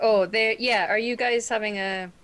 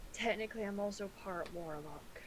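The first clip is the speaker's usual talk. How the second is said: barely audible, very quiet, confiding half-whisper; 16 dB quieter than usual. Admitting in character something rarely shared with people: half-whispering really quietly. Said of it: "so I'm gonna whisper really quietly".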